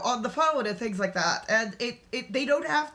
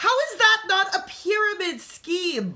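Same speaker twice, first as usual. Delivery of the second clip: speaking up, loud raised voice, pitched up; 8 semitones higher, 5 dB louder than usual. Speaker reacts to what another speaker just described, raised voice. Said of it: "sorry for raising my voice".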